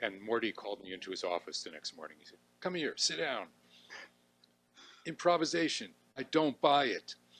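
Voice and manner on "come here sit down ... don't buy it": put-on New York borough accent, raised and pitched up. Retell what he said after calling you into his office the next morning, imitating Morty's borough accent. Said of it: "I'm trying to imitate his accent".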